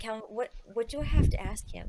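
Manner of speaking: hushed, soft, under-the-breath whisper. Whispering a question to a companion during an interrogation: whisper. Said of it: "I whisper to Calvin".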